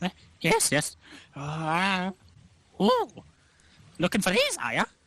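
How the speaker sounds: sing-song swooping voice. Voicing an alchemist who looks up as a customer walks in: voicing the alchemist. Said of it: "Starts looking through them".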